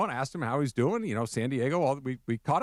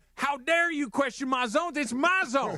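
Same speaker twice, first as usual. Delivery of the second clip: very high-pitched, belligerent, combative put-on Southern accent; 12 semitones higher than usual. Riffing on a baseball umpire bit, in a put-on Southern umpire voice. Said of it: "Baseball Southern. Let's fight umpire".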